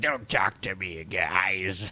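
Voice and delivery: put-on angry troll voice. Teasing another speaker by imitating him as an angry troll. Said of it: "you're like the angry, like, troll".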